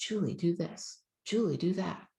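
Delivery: tiny, very small, still, slow voice. Speaker recounting how God speaks to her, God's very small voice. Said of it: "it's a very small voice".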